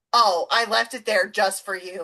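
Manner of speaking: ordinary talk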